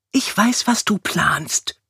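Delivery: deliberate, slow, drawn-out, high whisper. A wife speaks to her husband while elbowing him in the ribs, whispering. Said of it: "wisperte die zierliche Carlotta".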